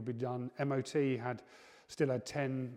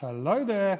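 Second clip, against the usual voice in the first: very loud, high, slightly feminine voice; 7 semitones higher, 9 dB louder than usual. After selling a couple of cars, the seller greets someone in his sold-a-car voice. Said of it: "You've got your sold a car voice on".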